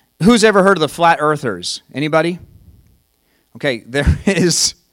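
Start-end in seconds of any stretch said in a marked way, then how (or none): 3.6-4.7 speaking through laughter. Bringing up the flat earthers to the audience, laughing while talking. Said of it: "I'm laughing".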